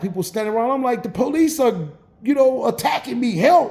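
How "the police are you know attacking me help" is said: put-on yelled, pleading delivery. Retelling calling to onlookers during an arrest: retelling own yell for help. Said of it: "and I'm yelling".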